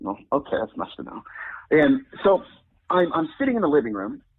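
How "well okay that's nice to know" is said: usual speaking voice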